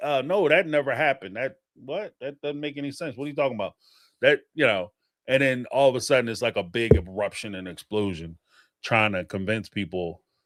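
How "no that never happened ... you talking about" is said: ordinary delivery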